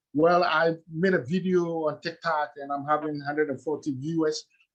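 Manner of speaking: ordinary talk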